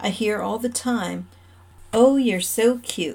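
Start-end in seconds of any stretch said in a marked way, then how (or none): 1.9-3.2 imitated, mock condescending, patronizing tone. Complaining about how people treat them, the speaker mimics what they hear: mock-condescending. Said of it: "in that condescending tone".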